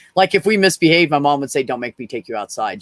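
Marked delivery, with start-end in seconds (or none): 1.6-2.8 very quiet hushed menacing voice, quieter. Retelling how mom warned misbehaving kids in church: imitating a very quiet warning. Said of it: "She'd say it very quietly so no one else could hear".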